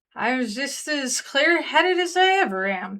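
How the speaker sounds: put-on drunken slurred speech. Reading the reply of someone who's had half a dozen martinis, slurred drunk voice. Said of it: "and it says slurred voice".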